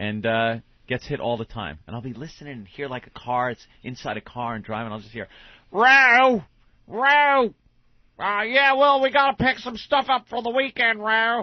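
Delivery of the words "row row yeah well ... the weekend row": put-on Baltimore-accented voice, very high pitched and loud. Retelling a pocket-dial call from the stepfather: imitating Sal's Baltimore accent. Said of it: "with his Baltimore accent".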